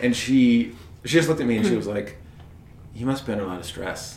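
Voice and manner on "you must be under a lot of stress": really tender, gentle voice. Retelling how a woman answered the speaker's complaints, imitating her tender voice. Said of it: "She said it really tender".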